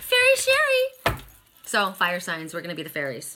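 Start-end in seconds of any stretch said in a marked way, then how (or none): 0.0-0.9 piercing, ear-splitting, very high call. Retelling how their mom used to call them, imitating mom's ear-splitting high voice. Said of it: "It was so high it was ear splitting".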